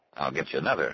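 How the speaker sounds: plain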